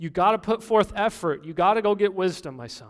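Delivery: put-on earnest, persuasive, urgent, emotional tone. Speaker voices a father's appeal to his son, acting out an urgent appeal. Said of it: "the urgency in my voice".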